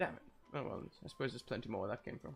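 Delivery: whispered mutter under the breath. Voicing a character left alone after his date walks off: muttering under breath. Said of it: "mutter under his breath".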